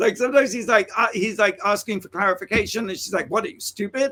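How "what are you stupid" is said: short, snapping, snappy clipped delivery. Retelling how she answered the director's question: imitating someone snapping. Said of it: "she kinda snaps at him".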